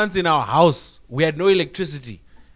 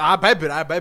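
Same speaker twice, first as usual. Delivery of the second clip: ordinary talk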